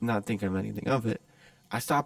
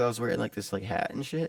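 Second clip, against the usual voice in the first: ordinary talk, nothing marked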